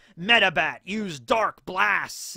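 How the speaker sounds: loud, firm, deliberate commanding voice. Acting out summoning a monster: commanding a Pokemon. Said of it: "You gotta summon Medibat and be like".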